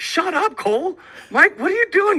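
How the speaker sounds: high, loud, sharp scolding voice.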